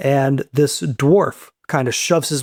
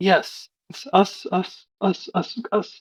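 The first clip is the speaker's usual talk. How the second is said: whispered stutter, tripping over words, repeating; 6 semitones higher, 6 dB quieter than usual. Retelling a story, the speaker acts out a character's reply, stammering and stuttering. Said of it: "He stammers and he stutters".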